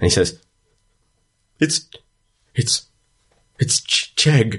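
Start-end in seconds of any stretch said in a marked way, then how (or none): 1.6-4.6 put-on very high, slow, stammering old man voice near tears. Voicing the old man naming the statue: old man close to tears. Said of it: "there's almost tears in this old man's eyes".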